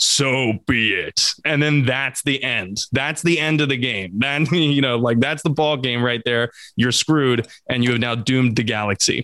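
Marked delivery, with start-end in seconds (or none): 0.0-1.3 really deep, eerie, creepy voice. Describing a game ending where you shoot the child, Catalyst's deep creepy voice. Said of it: "gets a really deep, creepy voice and it goes".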